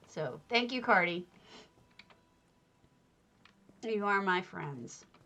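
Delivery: choking up, voice catching with emotion. Thanking a friend and the audience, choking up. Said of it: "Now I'm choking up again".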